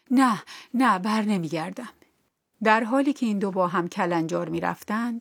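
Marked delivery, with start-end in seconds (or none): 0.1-1.9 breathless, panting, trembling, quavering voice. The princess answers the boy who ran after her, breathless, trembling voice. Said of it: "در حالی که نفسش به شماره افتاده بود با صدایی لرزان گفت".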